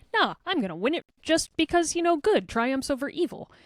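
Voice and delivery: cute, cheeky, high voice. Comparing two fighters in an argument: cute, cheeky Mario voice. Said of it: "Mario is still kinda cute and cheeky, where he's like".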